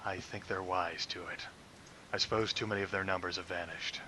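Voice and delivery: very low-pitched, very quiet voice. Speaking in character as Soloro after a failed trick: low, low voice. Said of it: "this low, low voice".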